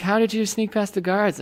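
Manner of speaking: ordinary talk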